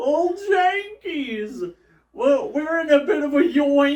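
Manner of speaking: savage mocking taunt in very high cartoon voice. Retelling how Shaggy mocked Velma in the episode: imitating Shaggy taunting Velma. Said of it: "he went savage. Just like".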